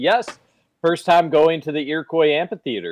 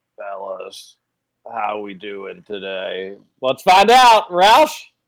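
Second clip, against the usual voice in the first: relaxed, slow, drawn-out friendly buddy voice; 6 semitones lower than usual. Waiting for Roush to join the call, imitating Roush's voice. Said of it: "I'm half expecting Roush's voice to be like".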